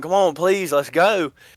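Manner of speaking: acted-out urgent, held-in pleading call, screaming. Retelling how she screamed at her barking dogs, retelling screaming at them. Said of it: "And I'm screaming at them".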